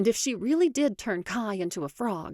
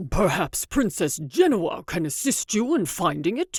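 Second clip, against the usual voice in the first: words forced out through clenched, gritted teeth; 4 dB louder than usual. Reading a story, a servant at the room's edge answers, through gritted teeth. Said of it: "he says through gritted teeth".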